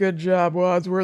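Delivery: suddenly serious, steely tone with the fun dropped. Recalling Miss Peacock's ending line: imitating Miss Peacock getting serious. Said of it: "when she gets serious for a second".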